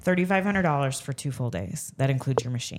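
ordinary talk

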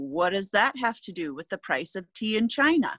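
usual speaking voice

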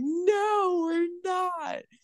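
acted, very high, tearful, drawn-out crying protest. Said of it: "And I'm like crying and I'm like".

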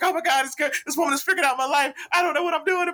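put-on panicked screaming. Retelling walking off getting louder and louder, reenacting a panicked yell. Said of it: "just yelling and screaming like I'm having a full-blown panic attack".

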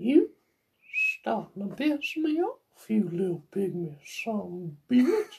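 high, soft, swooping, wandering creepy voice. Asked about it, speaker shows he can still do Herbert the Pervert voice. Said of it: "I could still do Herbert the Pervert".

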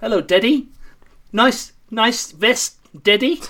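put-on British accent. Joking about being the British version of a dad: put-on British accent. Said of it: "the British version of dad".

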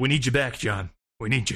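deep, dramatic action-movie voice. Describing a government plea in an action movie, put-on action movie voice. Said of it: "you're fucking on it with the movie voices today".

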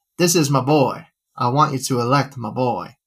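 broad put-on Texas drawl. Quoting a man with his arm around RFK, imitated Texas accent. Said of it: "saying in his Texas accent that I'll see if I can impersonate here".

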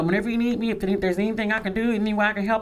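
ordinary talk

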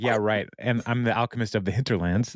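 ordinary talk

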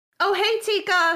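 bright, loud, cheerful tone. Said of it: "she says to Tika next door".

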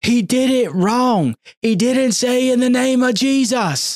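very high, very slow, drawn-out Southern yell. Retelling a relative yelling from the back during a baptism: imitating a yell in a Southern accent. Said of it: "she had a Southern accent".

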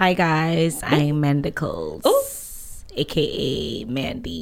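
trying to sound sexy. Podcast co-host introduces herself to listeners, trying to sound sexy. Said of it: "Trying to be sexy".

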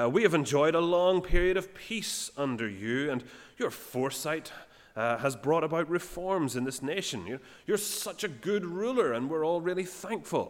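oily, flattering high voice. Retelling a Bible passage, the lawyer Tertullus flattering the judge: voice for Tertullus. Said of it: "couldn't help doing a little voice for him".

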